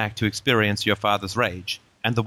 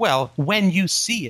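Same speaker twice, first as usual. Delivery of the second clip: high, impassioned, passionate shouting; 7 semitones higher than usual. Answering a question mid-conversation, passionately yelling. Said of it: "Sorry, I'm just yelling".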